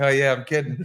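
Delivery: normal talking voice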